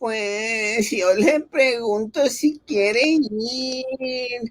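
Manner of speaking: high-pitched voice with "ir" drawn out. Teacher quoting a parent of a failing student, imitating a mom's voice. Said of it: "in your mom's voice".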